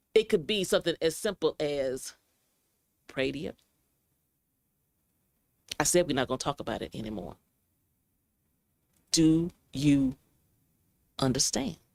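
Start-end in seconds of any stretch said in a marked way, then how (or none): 3.1-11.8 acted menacing calm voice, pitched lower. Acting out an abusive partner who ends a discussion: intimidating calm tone. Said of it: "But that tone of voice, that cadence".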